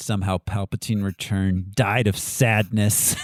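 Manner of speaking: very low, slow muttering under the breath. Imitating own rants about Star Wars at home: imitating own mumbling. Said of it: "you'll just hear me mumbling".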